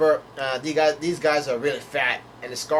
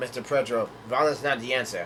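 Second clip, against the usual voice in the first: ordinary delivery, nothing marked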